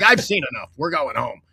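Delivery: annoyed, pissed-off, done-with-this tone. Retelling a fan's wife leaving the game early: imitating a pissed-off wife. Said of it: "his wife was more pissed off than he was".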